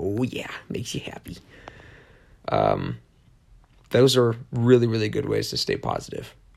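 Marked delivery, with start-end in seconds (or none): 0.0-1.4 whispered, soft, breathy, sweet-talking voice. Showing how to talk to a pet: talking to a pet. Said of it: "Talking like this to him".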